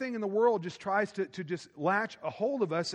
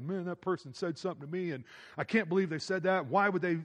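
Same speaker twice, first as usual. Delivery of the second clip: ordinary delivery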